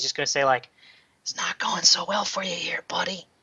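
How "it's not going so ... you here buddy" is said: sneering, mocking, breathy whisper. A player's character taunts a man just set on fire, mocking whisper. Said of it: "just kind of whisper to him".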